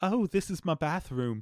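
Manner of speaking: clumsy, high-pitched, put-on Australian accent. Describing people in Australia, the speaker mimics them in a bad Australian accent. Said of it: "and I can't do an Australian accent".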